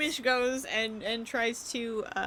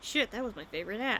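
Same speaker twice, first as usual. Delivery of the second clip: grumbled, muttered under the breath; 3 semitones lower, 4 dB quieter than usual. A narrator voices the captain reacting to the players' request: muttering. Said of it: "The captain kind of mutters".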